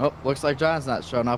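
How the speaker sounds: normal talking voice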